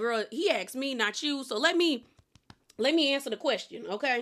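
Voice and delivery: ordinary talk, nothing marked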